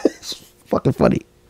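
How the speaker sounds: laughing so hard it brings tears. Host tells podcast listeners about a video; laughing to tears. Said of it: "I'm crying a little bit because it's funny".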